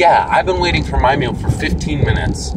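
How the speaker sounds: plain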